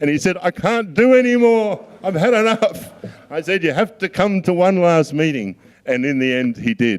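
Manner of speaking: talking through laughter. Recounting a memory from a busy trip, the speaker talks while laughing. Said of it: "I'm sorry I'm laughing".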